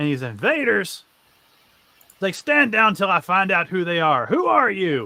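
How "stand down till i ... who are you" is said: loud, barked, commanding shout. A game narrator voices a man shouting at the players' team, shouting. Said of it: "He's shouting at your team".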